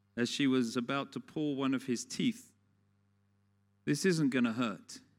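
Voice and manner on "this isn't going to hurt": imitated professional-sounding voice. Retelling what she told him as she was about to pull his tooth, professional voice. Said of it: "She said in her professional voice".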